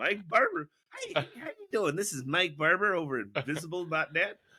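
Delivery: slightly nasal, put-on telephone-style voice. Describing phone calls he made under a fake name: put-on nasally voice. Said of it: "get a little nasally".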